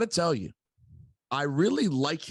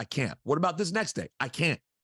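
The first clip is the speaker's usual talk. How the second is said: ordinary talk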